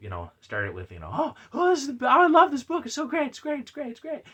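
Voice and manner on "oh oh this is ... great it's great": very high, gushing, excited voice. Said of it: "I know you're excited".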